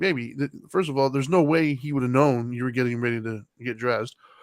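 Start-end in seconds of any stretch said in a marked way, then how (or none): none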